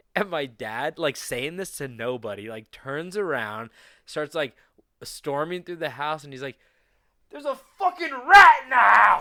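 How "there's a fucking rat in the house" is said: very loud, very high, furious raging shriek. Retelling how the dad stormed through the house, imitating his mad outburst. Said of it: "He was so fucking mad".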